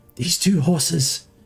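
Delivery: confiding, secretive stage whisper. As the man bringing you to two horses, whisper to you. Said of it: "but he whispers to you, and he says".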